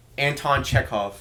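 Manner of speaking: name given American pronunciation. Saying a name from a play in an american accent. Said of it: "let's say it in an American accent".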